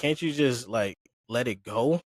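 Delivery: ordinary talk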